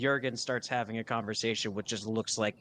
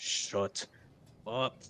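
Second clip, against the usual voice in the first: muttered aside, audible, to himself. Voicing a character answering an inner voice: muttering to himself audibly. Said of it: "he would once again mutter to himself, but, like, audibly loud".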